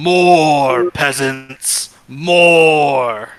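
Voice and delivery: cavern-filling, echoing, drawn-out call. A voice calls out through a cavern, in an echoing voice. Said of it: "you hear an echoing voice throughout the cavern".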